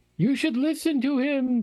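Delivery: high, otherworldly, ethereal voice. Voicing a voice speaking from nothing in the game: ethereal voice. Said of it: "says the ethereal voice from nothing".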